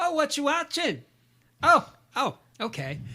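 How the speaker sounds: very high, swooping, sing-song motherly voice. On a podcast, retelling a mother trying to bond with her teenager, as an impression of own mom. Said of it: "my mom hates when I do impressions of her".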